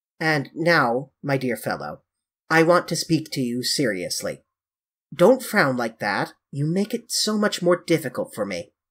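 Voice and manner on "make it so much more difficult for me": ordinary delivery, nothing marked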